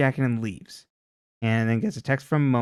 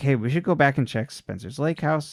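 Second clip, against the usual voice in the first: ordinary talk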